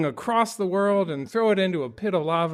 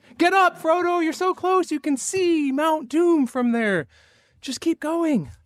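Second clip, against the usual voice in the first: put-on, very high, coaching-style yelling; 11 semitones higher than usual. Showing how they react while watching the movie, re-enacting yelling at the TV. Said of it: "I'm technically yelling at the T V".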